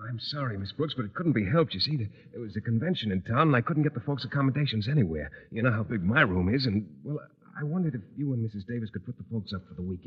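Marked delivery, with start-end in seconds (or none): 5.5-10.1 whispering, much quieter and lower. A son makes a request of a woman while his mother watches, whispering. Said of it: "You know better than to whisper".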